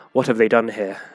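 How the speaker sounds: muttered quietly under the breath. Game master voicing a male bird character looking at the Aarakocra, muttered under breath. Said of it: "he sort of mutters under his breath".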